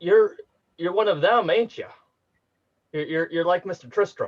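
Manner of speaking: gruff character voice. Narrating a scene and voicing Polly, in a fairly gruff voice. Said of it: "in a fairly gruff voice".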